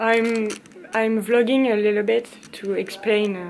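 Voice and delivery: loud English with a heavy French accent.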